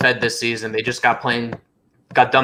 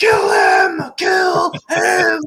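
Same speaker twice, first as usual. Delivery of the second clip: mock, shrill, very high, slow, drawn-out crazed screaming. Retelling watching his brothers fight live: imitating own screaming. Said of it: "where I'm just screaming".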